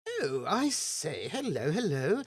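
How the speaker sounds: put-on drawled, posh upper-class English accent. Voicing a young agent in a jaunty entrance: posh Oxford-Cambridge English accent. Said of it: "that kind of accent".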